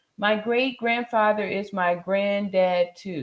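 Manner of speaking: ordinary talk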